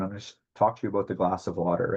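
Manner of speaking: fast rattled-off auctioneer-style delivery. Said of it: "I'm talking like an auctioneer here".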